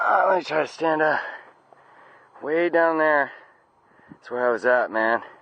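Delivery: out of breath. Stopping to rest after climbing up a long slope, out of breath. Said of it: "am I out of breath".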